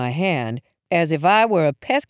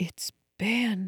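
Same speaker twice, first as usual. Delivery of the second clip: hushed, very soft half-whisper, barely audible; 2 semitones higher, 10 dB quieter than usual. Mom, seeing the dead neighbor's face, tells her child, half-whispered. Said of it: "she whispered".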